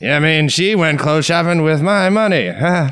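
put-on high old man puppet voice. Doing a Jeff Dunham puppet bit: Jeff Dunham grandpa puppet voice. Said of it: "It's a Jeff Dunham".

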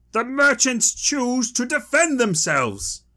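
very high-pitched shouted voice. Narrating a story, voicing Helgi Njalsson as he shouts out: Helgi Njalsson shouting. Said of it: "Helgi Njalsson shouts out".

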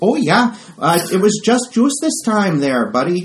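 put-on Midwestern American accent. Game master lets the elf Jenny hand over the juice: Jenny's Midwestern accent. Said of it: "that's the Midwestern accent".

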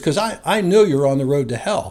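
ordinary talk

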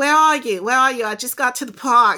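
put-on New York accent. Retelling a phone call from a guy: imitating a New York accent. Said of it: "he had a New York accent too".

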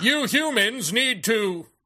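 high-pitched alien entity voice coming through a human. Describing a man who channels an alien entity, mimicking how he talks: channeled alien entity voice. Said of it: "he talks like".

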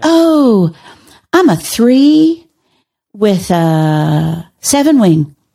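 mock excited, sing-song, very slow and drawn out. Retelling what a woman on a flight said: imitating excited speech. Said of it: "then she got all excited".

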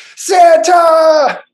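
very high, very loud, excited shout. Talking about Santa, then shouting the name in Will Ferrell voice. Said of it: "very Will Ferrell voice".

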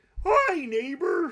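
very high-pitched cartoonish voice. Talking about doing character voices, showing the higher Goofy voice. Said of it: "You really need Goofy's higher".

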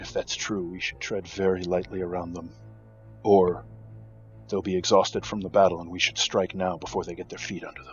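soft, hushed, leaning-in whisper. Voicing a male who leans over to a female: whispering. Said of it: "he kind of whispers to".

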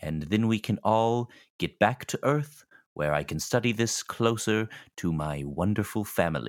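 evil-sounding, sinister villain voice. Speaking in character to the group: sounding evil. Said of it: "I'm starting to sound evil".

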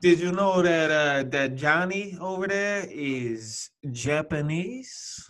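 slow mock Italian mobster drawl. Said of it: "attempted an Italian accent".

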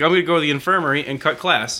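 ordinary delivery

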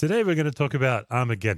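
bright, upbeat, cheerful swooping sing-song. Introducing today's episode topic to listeners, said cheerfully. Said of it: "i say that very cheerfully".

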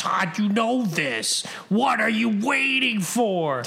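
put-on yelling. Imagining listening to this podcast later, retelling a yell at himself. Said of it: "be yelling at myself".

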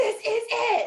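mock very high, fired-up, full-on yell. Speaker recalls how Terry talked about this, imitating Terry yelling. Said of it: "You were like literally yelling in the microphone".

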